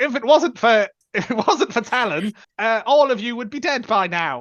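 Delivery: exaggerated thick British accent. Retelling a line from Captain Morgan: Captain Morgan British accent. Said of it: "the most British accent of anyone ever".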